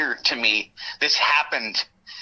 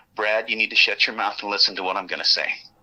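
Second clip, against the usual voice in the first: mock flat, quiet, dead calm menace, lower; 5 semitones lower than usual. Retelling what an agent told the speaker: imitating a dead calm warning. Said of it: "when he said that very dead, not, he didn't yell".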